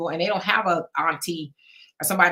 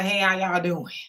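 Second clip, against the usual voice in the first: spent, worn-out, barely able to talk. Showing the greeting given when the mind is fried: mock tired greeting. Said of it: "my mind was, spent and fried, can't talk anymore".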